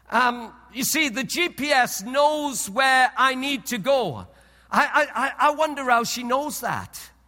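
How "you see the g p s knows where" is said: usual speaking voice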